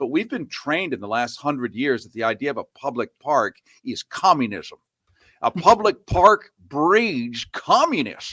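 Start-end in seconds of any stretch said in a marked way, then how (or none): 5.4-8.3 put-on drawl, pitched up, slow and loud. Mocking the claim that parks breed communism: put-on Lindsey Graham accent. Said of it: "you have to have that accent when you say communism".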